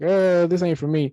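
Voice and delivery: ordinary talk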